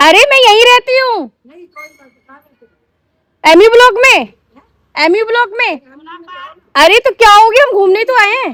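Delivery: high, loud, rude, harsh scolding tone.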